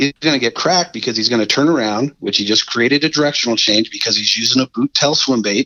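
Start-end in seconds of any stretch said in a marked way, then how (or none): none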